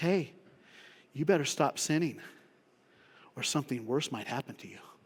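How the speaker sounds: put-on dry, lightly teasing sarcastic tone. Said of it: "Jesus smiles at him".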